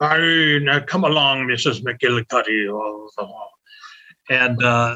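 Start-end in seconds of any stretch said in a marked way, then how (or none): 0.0-3.1 put-on loose Irish-tinged stage voice. Answering a question about early sound films, imitating Edgar Kennedy's Irish accent. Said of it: "got a kind of an Irish accent".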